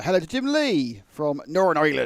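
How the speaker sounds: loud, sing-song, slightly pirate-like West Country accent. A host reads out greetings to listeners: West Country accent. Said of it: "why have I done Northern Ireland in a West Country accent?".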